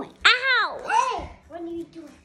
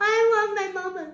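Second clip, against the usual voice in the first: put-on weepy, fake crying, sobbing the words; 2 semitones higher than usual. Speaker shows they can act like they're crying, fake crying. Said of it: "I can act I'm crying".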